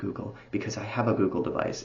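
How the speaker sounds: soft, hushed whisper. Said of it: "We're gonna whisper it".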